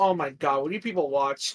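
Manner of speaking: acted fed-up, disbelieving, low, exasperated outburst. Retelling how a middle-aged professor reacted to students describing an episode, mock-exasperated. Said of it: "he like rolls his eyes and goes".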